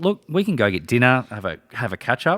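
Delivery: ordinary delivery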